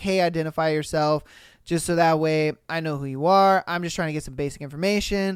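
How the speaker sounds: usual speaking voice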